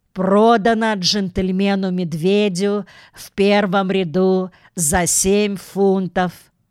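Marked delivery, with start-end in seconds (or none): none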